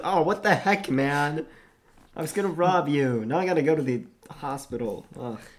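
mock put-out, mildly irritated, annoyed tone. Acting out his reaction to getting hurt while trying to rob someone, mock-annoyed, not screaming. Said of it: "Not even like screaming in pain".

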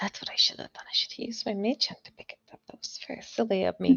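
hushed, whispered, mumbled muttering. Voicing a character who scolds herself for picking it up bare-handed: mumbling to herself. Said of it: "like, mumbles to herself".

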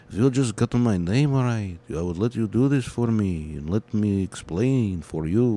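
vampire-style character voice. Speaker playing an upset rabbi character wanting his name said right, in a Dracula voice. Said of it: "Now you sound like Dracula".

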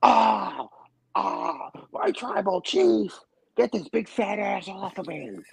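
very high, drawn-out, rough, creaky voice. Picturing a wrestling manager getting stink-faced, Paul Heyman impression. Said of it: "that's a spot on Paul Heyman right there".

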